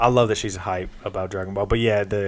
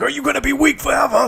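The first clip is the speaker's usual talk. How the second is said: put-on very high, shrill scolding shout. The speaker describes Vegeta popping into their head, retelling Vegeta's yell. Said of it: "just yelling at me like".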